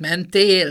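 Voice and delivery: mentél with second syllable tél stressed. Showing stress shifted for emotion, stress on tél in mentél. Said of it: "akkor csúszhat el a második szótagra a hangsúly".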